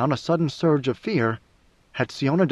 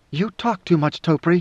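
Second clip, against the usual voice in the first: plain reading voice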